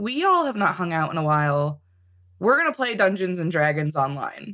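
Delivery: ordinary talk, nothing marked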